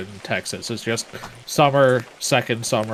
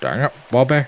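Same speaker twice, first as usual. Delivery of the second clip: put-on Scottish accent, higher pitch; 2 semitones higher than usual. Repeating a Texan catchphrase, drifting into a Sean Connery impression. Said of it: "Why did you turn into Sean Connery?".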